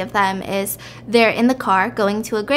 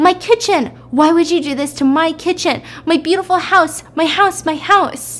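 play-acted constant wailing scream, pitched high; 7 semitones higher, 3 dB louder than usual. Retelling a woman screaming about her burning kitchen, imitating her screaming. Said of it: "she's just the whole time screaming".

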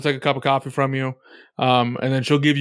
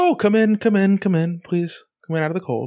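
higher-pitched mother voice; 6 semitones higher than usual. Voicing a mother welcoming guests at the door: voicing Ozaru's mother. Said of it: "door will open and Ozaru's mother will open, like".

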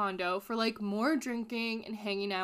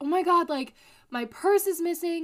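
frantic, high, loud, freaked-out panic; 7 semitones higher, 8 dB louder than usual. Retelling how a woman in a hot tub reacted: imitating a freaked-out woman. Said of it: "starts getting very freaked out and is like".

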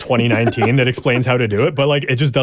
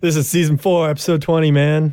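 put-on stoner voice; 4 semitones higher than usual. Co-host redoes the voice from an earlier episode intro, in a stoner voice. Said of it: "why I was like doing a stoner voice".

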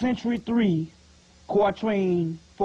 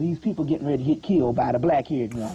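ordinary delivery

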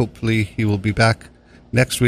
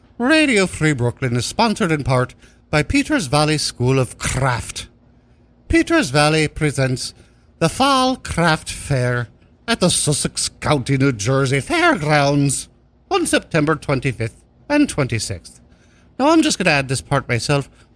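awful, sing-song put-on Irish accent; 5 semitones higher than usual. Reading sponsor copy for Radio Free Brooklyn, terrible Irish accent. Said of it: "I'm gonna read this in my terrible Irish accent".

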